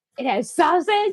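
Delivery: high, play-acted, playful, jokey half-yell. Retelling what was said while lifting the pan of jambalaya: retelling a yell. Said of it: "It's like I'm yelling".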